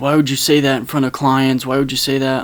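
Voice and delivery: ordinary talk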